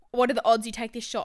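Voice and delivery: ordinary talk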